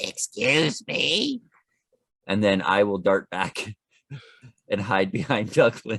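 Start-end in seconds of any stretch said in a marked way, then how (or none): 0.0-1.4 goblin creature voice. Player knocks on a door in the game, speaking as a goblin: goblin voice. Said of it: "in my best impression of a, a goblin".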